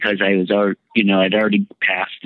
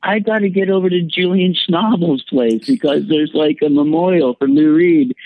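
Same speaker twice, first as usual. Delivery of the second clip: acted-out, re-enacted screaming; 8 semitones higher than usual. Recounting insisting on getting to a memorial, retelling a scream. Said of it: "and then I'm like screaming".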